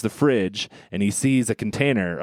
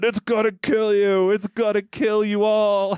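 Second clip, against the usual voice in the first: put-on very high-pitched, drawn-out shout; 11 semitones higher than usual. Retelling a movie scene where a kid warns shoppers: imitating someone yelling. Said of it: "he's just yelling".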